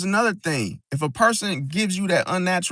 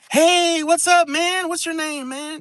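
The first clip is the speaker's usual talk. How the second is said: very high-pitched, overly chummy, too-friendly tone; 10 semitones higher than usual. Acting out a coworker who gets too friendly too fast, overly friendly. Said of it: "the person on the job that's too friendly too fast".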